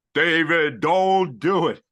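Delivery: thundering, loud, booming voice. Imagining the clouds parting and lightning coming down: booming voice of God. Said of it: "the booming voice of God".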